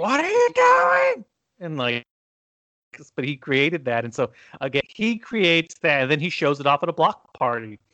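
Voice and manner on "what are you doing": very high, shrill yelling. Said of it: "his mom was yelling at him".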